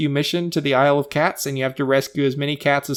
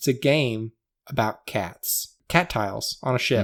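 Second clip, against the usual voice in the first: slow, deliberate, each word laid out separately; 3 semitones lower, 4 dB quieter than usual. Addressing the folks listening, putting something in perspective: said slowly. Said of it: "let me say it slowly".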